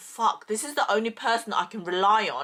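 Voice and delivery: plain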